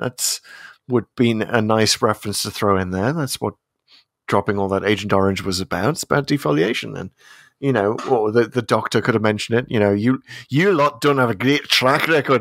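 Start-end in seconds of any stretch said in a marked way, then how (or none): 9.9-12.4 put-on Scottish accent, higher pitched. Suggesting a line the Doctor could have said: Capaldi Scottish impression. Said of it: "I bust out my Scottish impression".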